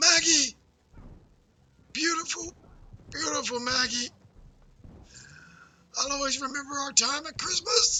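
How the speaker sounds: very high, gurgling, gargling dying voice. Playing a dying character in a game, in a gargling dying voice. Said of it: "sorry, I'm gargling".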